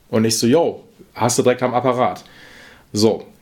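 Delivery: plain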